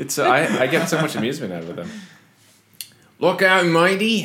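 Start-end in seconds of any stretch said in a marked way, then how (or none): 3.2-4.3 bad fake Australian accent, higher, slower. Joking with others, the speaker does a bad Australian accent. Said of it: "your Australian accent's bad".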